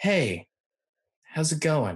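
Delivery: relaxed, easygoing, casual delivery. Demonstrating a tone of voice while discussing tone, easy casual tone. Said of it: "that easy tone".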